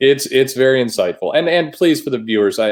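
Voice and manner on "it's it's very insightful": dry, deadpan, faux-earnest, ironic sarcastic tone. Answering the other speaker's point about block bots: sarcastic. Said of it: "I'm being sarcastic, clearly".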